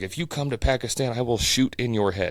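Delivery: put-on mad, angry, threatening outburst. Retelling a scammer who got mad and threatened: imitating an angry threat. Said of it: "he was mad that I".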